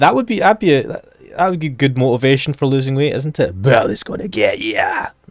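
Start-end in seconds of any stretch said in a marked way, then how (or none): 3.6-5.1 put-on broad Scottish accent with drawn-out words. Imagining someone at the gym saying an advert's slogan, in a broad Scottish accent. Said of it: "a person with a broad Scottish accent saying that".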